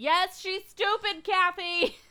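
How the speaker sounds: loud scream. Retelling screaming at the TV during an episode: imitating own past screaming. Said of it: "I was literally screaming at my T V".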